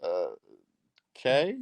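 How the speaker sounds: unimpressed, unconvinced tone with swooping uh-kay. Retelling own reply when a date looked at her phone: imitating own unimpressed reply.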